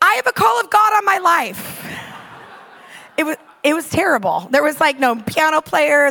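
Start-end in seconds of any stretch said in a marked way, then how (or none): 0.0-1.9 mock, sudden, high, blurted-out shout. Retelling the moment of speaking up in a car: retelling own shout. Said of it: "I just shouted out".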